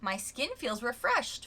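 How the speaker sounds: ordinary talk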